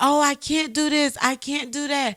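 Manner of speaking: sobbing, high-pitched tearful voice. Retelling a friend's tearful phone call: imitating a friend crying. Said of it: "she was crying".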